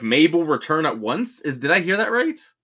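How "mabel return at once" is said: normal talking voice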